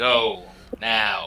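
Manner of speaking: intimidating voice. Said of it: "a very intimidating stare".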